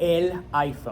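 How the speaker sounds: put-on a little Spanish accent.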